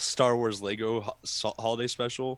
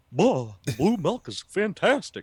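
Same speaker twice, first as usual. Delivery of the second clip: much higher, put-on Texan character voice; 6 semitones higher, 6 dB louder than usual. Show what you would say if someone had asked for Hank Hill, in a Hank Hill voice. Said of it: "I had to practice that moving to Texas".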